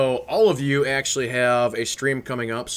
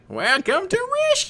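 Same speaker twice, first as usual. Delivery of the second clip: put-on alien bird creature voice. Imitating the game's bird creature on Rishi: bird creature voice from Rishi. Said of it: "I think I can do that voice".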